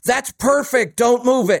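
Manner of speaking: high-pitched, loud yelling shout. Dad yells from the family room while the listener adjusts the antenna, imitating dad yelling. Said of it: "and he yells".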